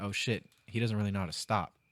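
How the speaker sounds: ordinary talk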